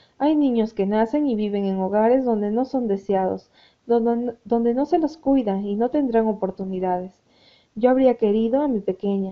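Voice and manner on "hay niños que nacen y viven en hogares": plain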